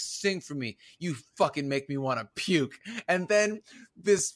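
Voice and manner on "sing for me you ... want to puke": mock, menacing movie-villain voice. Retelling a movie scene where a villain threatens a woman: imitating a menacing villain. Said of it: "he's just menacing her".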